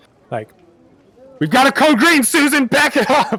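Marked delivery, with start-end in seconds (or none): 1.4-3.4 very high-pitched, loud shout. Voicing a merchant banging on a wagon: loud shout. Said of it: "shouts, like, loudly".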